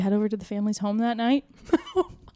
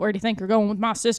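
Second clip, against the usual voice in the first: fake Pennsylvania Dutch accent. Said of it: "That's how they sound in Pennsylvania".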